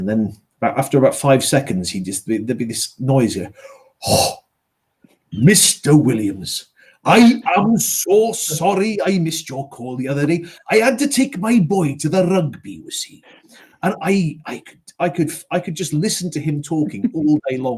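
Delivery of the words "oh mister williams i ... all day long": put-on Scottish accent, higher, slower. Retelling a phone call, quoting the caller who finally phoned back: imitating a scottish caller. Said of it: "He had a wonderful voice".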